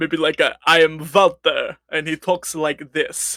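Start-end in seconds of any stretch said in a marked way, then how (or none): 0.7-1.8 put-on character voice with a light Russian accent. Player trying out a voice for their character Walter, Walter voice, a little Russian. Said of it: "Like a vampire?".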